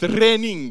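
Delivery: Scottish-accented voice.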